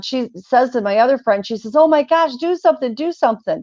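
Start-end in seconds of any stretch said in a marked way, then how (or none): 1.8-3.6 mock high, frantic, panicked voice near breaking down. Retelling a friend who is having a breakdown: imitating a panicked friend. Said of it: "My friend's having a breakdown".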